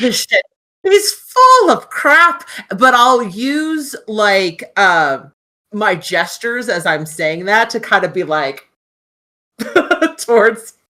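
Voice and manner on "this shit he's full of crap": put-on high-pitched, scoffing Irish accent. Player redoing Rita's line in character, Irish accent as Rita.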